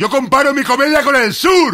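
slow high yell. A comedian recalls a speech he once gave, retelling his own shout. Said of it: "Yo gritaba".

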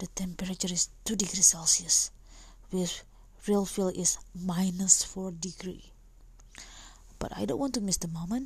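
speaking in a whisper. Recording a podcast in the middle of the night: whispering. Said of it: "I only can make a whisper".

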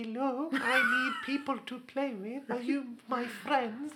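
put-on meek voice, very high, very slow, drawn-out. Retelling a voice used on Halo headset chat: put-on meek voice for Halo. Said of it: "had this voice that I used to do when I played Halo".

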